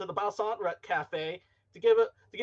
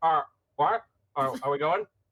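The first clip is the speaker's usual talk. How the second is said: garbled speech through a stuffed, full mouth; 6 semitones lower, 4 dB louder than usual. Voicing a turtle character asking if they're leaving: acting with mouth full of cookie. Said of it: "a dry almond cookie in his mouth".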